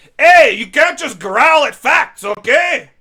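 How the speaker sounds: very high, very loud, booming shrill shout. Character answering Sigrun, who is growling under her breath: yelling. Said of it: "I'm sorry for yelling".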